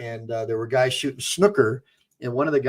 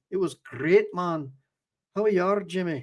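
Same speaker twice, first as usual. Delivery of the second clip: put-on Motherwell-style Scottish accent; 6 semitones higher than usual. Discussing which accents they can do, the speaker tries one: Scottish accent. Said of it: "But I could do a good Scottish one".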